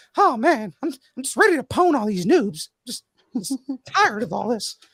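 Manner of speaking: very high, tired, worn-out cartoon voice. Doing a bit about Mickey getting off work: tired Mickey Mouse voice. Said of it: "Mickey getting off of work".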